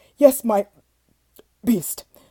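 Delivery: loud, stammering, desperate-sounding words. Reading a story, the desperate man answers the beast: stammering. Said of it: "stammered the desperate man".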